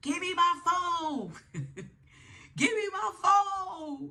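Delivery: very high, stretched-out, drawn-out screaming. Retelling how a woman stood still and demanded her phone: imitating someone screaming. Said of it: "she was just standing still screaming".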